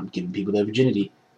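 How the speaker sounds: deep put-on voice, very low, very soft, hushed. Acting out a dude going around touching people, in a deep voice. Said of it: "Deep voice".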